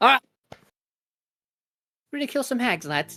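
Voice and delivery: much calmer tone. Voicing a character who turns to address the rest of the group, in a much calmer tone. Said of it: "in a much more calm tone".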